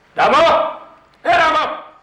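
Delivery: loud shouting. Calling for Ramo to bring ice: shouting a name. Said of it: "क्या चिल्ला क्यों रहा है?".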